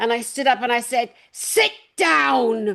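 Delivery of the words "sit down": cross, annoyed tone, last word "down" drawn out. Retelling standing up in court to tell lawyers: imitating her own cross command. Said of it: "I was just so cross".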